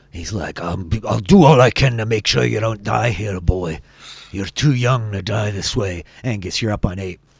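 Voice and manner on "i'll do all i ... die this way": loud, rough, growling dwarf voice. Voicing the dwarf Beaudry, back to back with Angus: Beaudry's growling dwarf voice. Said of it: "he just growls in Dwarvish".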